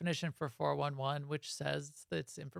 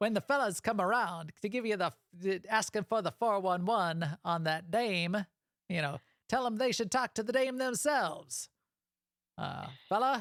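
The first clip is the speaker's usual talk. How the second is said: put-on old-timey 1920s voice, higher pitch; 5 semitones higher than usual. Speaker gives a character's advice about the fellas during a game, in a 1920s-style voice. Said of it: "you gotta get that feel on it".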